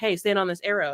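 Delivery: ordinary delivery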